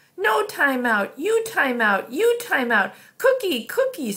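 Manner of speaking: high, spluttering, sputtering outburst, about to blow. Narrating a story, voice a character who was just told to cut it out, sputtering. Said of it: "sputtered Boots".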